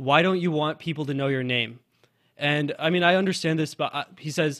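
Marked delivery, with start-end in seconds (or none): none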